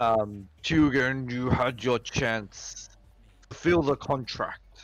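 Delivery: slow, loud demonic yelling voice. Narrating a game, voicing a demon calling from a portal: demonic yelling voice. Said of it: "a demonic voice that isn't his, kind of yell".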